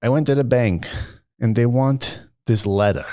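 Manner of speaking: horrible, bad, put-on New York accent. Retelling what an older client said about the bank: horrible new york accent. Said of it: "I have a horrible New York accent".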